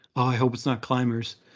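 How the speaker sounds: plain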